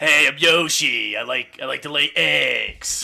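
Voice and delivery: put-on smoker's voice. Joking about casting Yoshi, voicing him: Ray Liotta as Yoshi. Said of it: "Ray Liotta is Yoshi".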